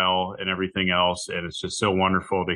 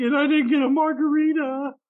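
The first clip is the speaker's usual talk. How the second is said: fake sobbing in a very high voice. Retelling what a friend's wife said: imitating someone fake crying. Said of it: "kind of fake crying".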